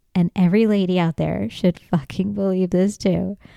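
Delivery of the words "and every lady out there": usual speaking voice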